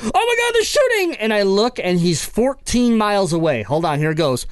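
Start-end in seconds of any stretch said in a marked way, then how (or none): 0.0-1.2 very high, panicked yelp, squealed. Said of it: "Cable died where he was like".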